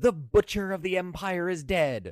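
high, drawn-out, play-acted shriek. Retelling how he danced around the harem: imitating a shriek.

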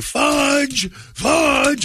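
acted, very high, repeated shrieking at full volume. Retelling rushing toward a kid standing in the road, acting out a scream. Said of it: "And I am just screaming".

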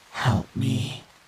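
faintly feminine, nearly womanly voice. Narrating a story, voicing a creature that speaks in an almost feminine voice. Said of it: "communicating in an almost feminine voice".

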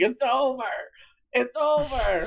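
mock drunk hollering, very high, drawn-out screaming. Recalling a video of Andre racing drunk down a street, imitating Andre's drunk screaming. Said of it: "he kept screaming".

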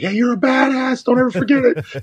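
very high, excited, rousing shouted yell. Recounting yelling to her as they open the door, retelling a yell. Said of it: "I'm like yelling".

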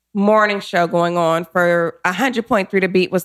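normal talking voice

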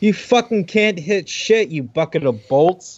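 high, cutting, jeering mockery. A player's character taunts a golem during a game fight, yelling an insult. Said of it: "I'm gonna yell at the golem".

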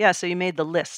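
put-on flat deadpan tone. Retelling a phone call, the speaker quotes the agent, imitating a deadpan agent. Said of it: "in his characteristic kind of deadpan".

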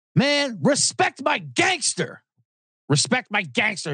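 play-acted crazed shout, slow, words stretched. Retelling a homeless man on a train calling out, retelling a yell. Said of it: "he yelled out".

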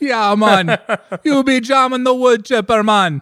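very high-pitched put-on Caribbean accent. Noticing their midwest accent drifting, the speaker slips into a caribbean accent. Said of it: "starts sounding like I'm from the Caribbean".

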